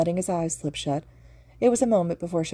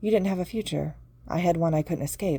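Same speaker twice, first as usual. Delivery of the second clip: ordinary delivery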